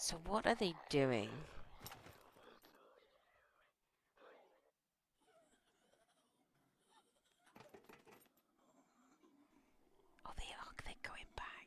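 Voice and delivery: very quiet, soft, hushed whispered running commentary. Speaker commenting on the conjoined twins going back, whispering. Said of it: "I don't know why I'm whispering".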